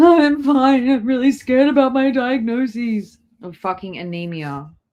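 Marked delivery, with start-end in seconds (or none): 0.0-3.2 high, loud, teary, sniveling voice. Mocking the other speaker's claim of being fine, mock sniveling. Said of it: "You were like sniveling".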